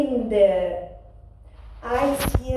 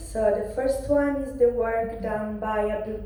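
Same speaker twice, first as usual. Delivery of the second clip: plain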